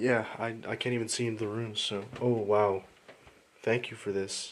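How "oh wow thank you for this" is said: sarcastic, slower. Reacting to a bad view of the rooms, speaking sarcastically. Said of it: "I say sarcastically".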